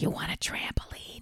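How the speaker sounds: loud stage whisper meant to carry. Retelling buying from a seller, the speaker repeats the offer in a loud whisper. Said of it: "I whisper talked loud enough for him to hear".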